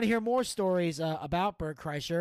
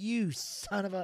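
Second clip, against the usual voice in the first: very slow speech through put-on laughter; 2 semitones higher, 3 dB quieter than usual. Retelling cursing at a man celebrating getting the picture, a laughing curse. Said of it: "But I'm laughing while I'm doing it".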